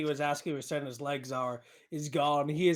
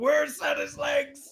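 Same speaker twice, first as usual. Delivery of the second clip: shouting, higher; 11 semitones higher, 4 dB louder than usual. Voicing the Marquise demanding to know where the legs are: character shouting. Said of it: "would definitely hear him shout".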